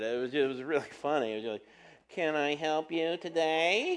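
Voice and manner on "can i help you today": put-on slower little kid voice. Retelling how the lady taking their order spoke, little kid voice. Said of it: "she sounded like a little kid".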